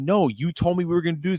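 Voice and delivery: acted-out heated, angry, outspoken shouting. Recounting a hallway scene, the speaker retells her yelling at Steve. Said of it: "she's yelling at Steve".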